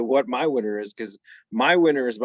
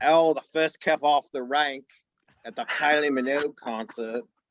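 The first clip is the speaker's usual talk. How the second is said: fake posh Australian accent, higher pitch; 4 semitones higher than usual. Reeling off Australian stereotypes for a laugh, put-on posh Australian accent. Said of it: "a bit of a posh Australian accent".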